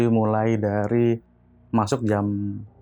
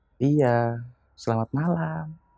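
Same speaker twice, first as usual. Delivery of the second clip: put-on courteous, kindly, friendly tone; 4 semitones higher than usual. Retelling how an elderly-looking woman greeted them: imitating a polite, friendly greeting. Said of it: "Dengan sopan dia bilang".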